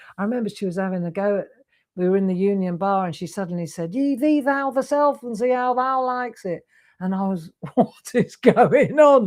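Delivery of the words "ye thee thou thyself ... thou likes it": put-on Sheffield English accent. Quoting a friend from Sheffield having a go in the Union Bar, strong Sheffield accent. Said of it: "She had a strong accent".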